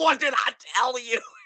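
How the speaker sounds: put-on very high, unhinged, frenzied shriek. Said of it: "she's like".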